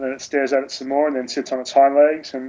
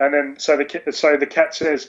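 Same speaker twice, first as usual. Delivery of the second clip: ordinary delivery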